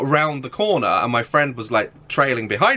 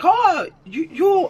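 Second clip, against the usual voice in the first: put-on very high, botched, unconvincing Swedish accent. Retelling what people who recognized the speaker said, attempting a Swedish accent. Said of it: "I can't do the fucking accent".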